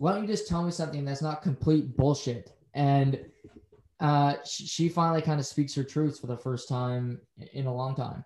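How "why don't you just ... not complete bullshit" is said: ordinary talk, nothing marked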